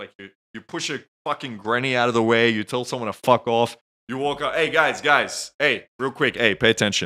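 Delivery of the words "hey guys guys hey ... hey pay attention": overly confident, arrogant, cocky and brash. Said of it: "just confident as fuck".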